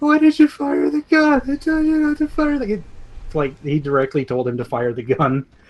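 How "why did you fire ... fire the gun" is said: weak, very high-pitched, wimpy little voice. Retelling a scene, quoting a man clutching his ears, in a wimpy little voice. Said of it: "in the most like wimpy little voice you've ever heard".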